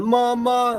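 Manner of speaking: put-on very slow, drawn-out, high child's voice. Voicing the kid heard in the background of a clip: imitating a kid in the background. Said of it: "Poor kid in the background's going".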